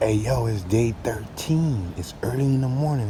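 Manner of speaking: hushed whisper. With a killer bug nearby, the speaker whispers an opening greeting. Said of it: "I'm whispering because there's this killer bug".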